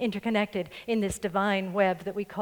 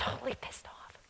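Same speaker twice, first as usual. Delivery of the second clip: very quiet, hushed, secretive whisper. Telling a story, whispering a rude phrase so as not to say it in church. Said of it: "I whispered that so I didn't have to say it in church".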